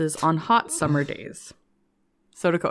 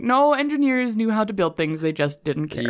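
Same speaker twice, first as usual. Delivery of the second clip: ordinary talk, nothing marked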